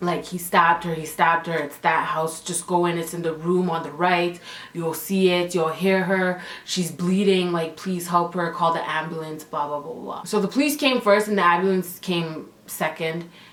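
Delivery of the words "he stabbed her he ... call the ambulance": ordinary talk, nothing marked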